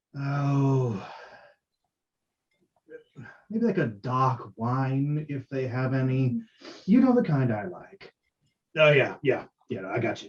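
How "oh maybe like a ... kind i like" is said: put-on cold, slow elf voice, faint British accent. Voicing an elf asking for dark wine: cold, even elf voice with slight British lilt. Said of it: "very cold, even tone".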